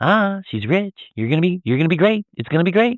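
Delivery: put-on happy salesman voice, very high. Describing a man's shift in tone, the speaker imitates his salesman act: imitating put-on salesman cheer. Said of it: "put forward this happy".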